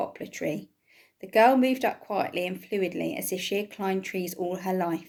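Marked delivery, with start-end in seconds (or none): none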